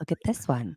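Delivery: put-on hushed voice. Retelling showing the kids the cabinets one by one: retelling own quiet voice. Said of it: "I will say it was real quiet".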